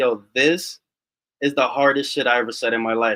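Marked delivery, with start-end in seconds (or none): none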